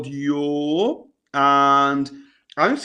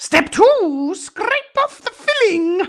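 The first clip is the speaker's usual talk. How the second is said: very high, put-on clown voice; 4 dB louder than usual. Talking yourself through a task step by step, in a clown voice. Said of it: "try and make a clown voice".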